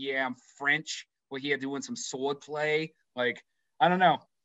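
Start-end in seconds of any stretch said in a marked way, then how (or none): 0.0-1.1 put-on Boston accent. Joking about an actor cast as a Frenchman, imitating Ben Affleck with a Boston accent. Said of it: "Do it like with a Boston accent?".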